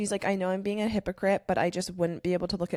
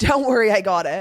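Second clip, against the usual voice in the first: put-on acted drunk voice, louder; 3 semitones higher, 11 dB louder than usual. Retelling a drunk man climbing the stairs alone, imitating a drunk. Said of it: "walking up the stairs drunkenly alone".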